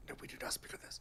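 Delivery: hushed, secretive whisper, barely voiced. Acting out a future dwarf hushing talk of outside: imitating someone whispering. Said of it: "someone will whisper".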